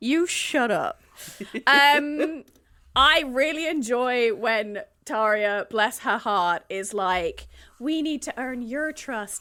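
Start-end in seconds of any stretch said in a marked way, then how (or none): 7.8-9.4 put-on gentle little Irish accent. Recounting a favorite moment from the story, Taria's little Irish accent. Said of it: "in her little Irish accent".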